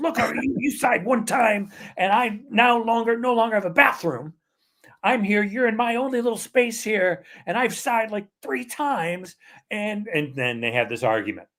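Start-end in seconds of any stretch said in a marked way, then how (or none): 0.0-9.4 shrill, exasperated fed-up outburst, very high-pitched. Retelling a man finally exploding at a woman crowding his space, re-enacted exasperated outburst. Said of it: "finally explodes and says".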